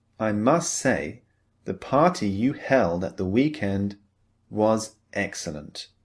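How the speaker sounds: ordinary delivery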